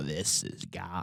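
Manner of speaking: whispered, sniveling, creepy voice. Showing how the character sounded early on in the movies, in a creepy, snivelly character voice. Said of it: "creepy, snivelly".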